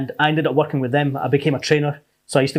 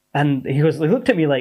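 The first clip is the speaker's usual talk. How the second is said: ordinary talk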